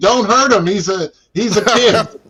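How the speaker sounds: mock yelling. Retelling how his coach yelled out at another player, imitating the yell. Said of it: "he yelled out at Nate".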